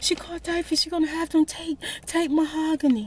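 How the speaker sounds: put-on hard crying. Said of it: "She couldn't even talk".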